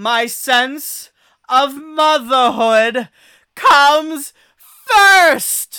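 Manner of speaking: very high, very loud, very slow earnest proclamation, acted. Quoting a line a character says in a movie, imitating an earnest declaration. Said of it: "honestly and earnestly say".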